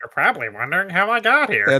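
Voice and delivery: dumb dopey put-on voice. Imagining a game's mouse narrator freezing the scene: really dumb voice. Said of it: "he has a really dumb voice".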